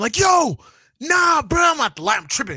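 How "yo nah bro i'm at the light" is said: screaming, very high, very loud and frantic. Retelling calling a brother on hearing the news: imitating own past yell. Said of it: "I'm screaming".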